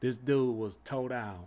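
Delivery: ordinary delivery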